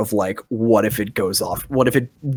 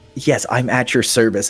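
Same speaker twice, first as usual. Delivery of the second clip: mock-servile tone, very backhanded. Voicing a character answering the mayor: incredibly backhanded service voice. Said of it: "incredibly backhanded".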